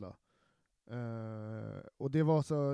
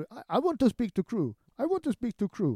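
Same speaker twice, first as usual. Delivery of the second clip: high, loud mock Chinese English accent. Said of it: "han blir upprörd".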